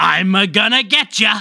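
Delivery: put-on heavy smoker voice. Speaker riffs on a Mario movie trailer, pack-a-day smoker Mario voice. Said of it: "pack-a-day smoker Mario that you're doing".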